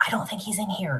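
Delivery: exaggerated stage whisper. Retelling how he answered, in a stage whisper. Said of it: "he kind of says in like a stage whisper".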